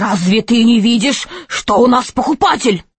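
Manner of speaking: hissed, reproachful tone. Narrator voicing a bald man who grabs a child by the collar, loud hiss. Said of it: "громко прошипел".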